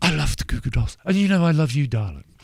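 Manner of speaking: acted upper-class English accent. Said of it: "it's that posh English accent".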